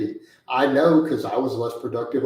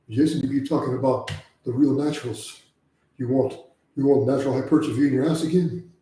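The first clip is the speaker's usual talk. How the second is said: mock, heavy-breathing put-on delivery. Speaker quotes how a man said a line to jason, imitating heavy breathing. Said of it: "He was breathing really heavy when he said it too".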